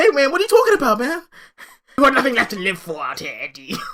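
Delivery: very high, loud, wild voice that swoops around. Act out the reply to Venom's idea of jumping into a rift, as a Tom Holland impression. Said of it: "your impressions of those guys... Tom Hardy became like".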